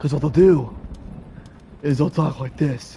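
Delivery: breathless delivery. Showing how Tomb Raider voice actors talk, speaking out of breath. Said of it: "And it's just out of breath".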